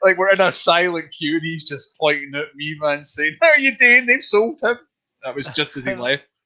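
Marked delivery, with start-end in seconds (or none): 3.4-4.8 put-on thick, heavy Glaswegian accent, very high and loud. Retelling a man pointing at him in a silent queue, in a heavy Glaswegian accent. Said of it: "the heavy Glaswegian accent".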